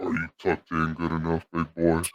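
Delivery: very low, hushed, eerie and menacing creepy voice. Imagining someone speaking to them in the dark, the speaker demonstrates a creepy voice. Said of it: "in that voice".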